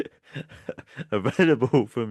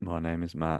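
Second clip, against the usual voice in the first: sad, soft, downcast and deflated tone; 7 semitones lower, 8 dB quieter than usual. Signing off a show by giving the hosts' names, sad-sounding. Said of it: "I don't know why I sounded so sad".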